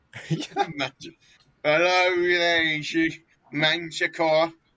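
terrible fake British accent, "there" stretched. Greeting someone by name, doing the worst British accent. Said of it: "we do the worst British accents".

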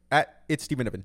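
very loud, high automated phone-assistant readout. Imitating how Siri reads out a group chat contact name: quick Siri voice. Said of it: "Siri always says it quick".

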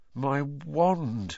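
shaky, trembling, quavering voice. Narrator voicing a character whose wand has just snapped, in a shaky voice. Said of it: "said Ron in a shaky voice".

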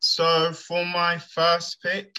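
trembling, unsteady voice. Starting to announce his first pick in a draft, in a shaky voice. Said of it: "You sound a bit shaky there".

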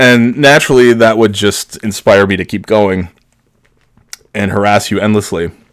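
ordinary delivery

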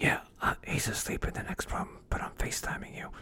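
secretive, hushed, breathy whisper. Recounting how she FaceTimed him from Florida, retelling her whispering. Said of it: "But she was whispering".

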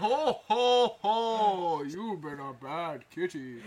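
loud, slow bellow with "ho" drawn out. Voicing a raised Santa Claus who faces a cat creature: Santa Claus voice. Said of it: "I'll say you raise Santa Claus".

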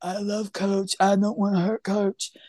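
plain, simple-minded character voice. Telling how Casey answered his mom, the speaker acts him out: imitating Casey. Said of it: "I shouldn't do an impression of".

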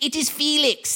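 odd, vaguely European accent. Imitating the professor who sounds like a younger man faking old age: Felix voice, weird unplaceable accent. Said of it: "this is his voice. Like, kind of a weird accent".

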